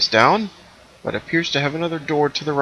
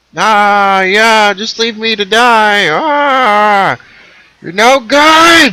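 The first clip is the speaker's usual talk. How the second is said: very loud, very high, slow, drawn-out angry yelling; 9 semitones higher, 10 dB louder than usual. Voicing a suit of armor as the players leave: angry yelling armor creature. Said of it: "It starts to yell at you".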